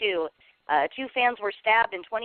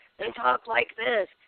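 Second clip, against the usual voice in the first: put-on smoker's voice, much higher pitch; 3 semitones higher than usual. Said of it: "smoking a pack of Marlboro".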